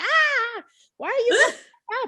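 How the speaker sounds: shrill, booming, puzzled cat voice, very high and drawn-out. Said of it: "and then she's like".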